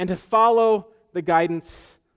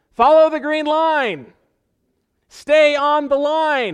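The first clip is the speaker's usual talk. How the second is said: high, loud, slow yelling. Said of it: "the Fidelity investment person yells".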